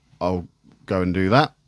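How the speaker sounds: ordinary talk, nothing marked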